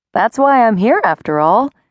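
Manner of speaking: said lightly. The narrator answers Gretel at the fair: said lightly. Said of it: "I said lightly".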